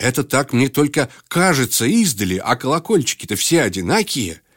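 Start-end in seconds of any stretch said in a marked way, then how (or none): none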